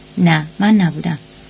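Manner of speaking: usual speaking voice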